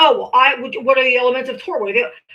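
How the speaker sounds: smug mocking voice. Imitating a law student quizzing people: mocking imitation of a law student. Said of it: "and you're like".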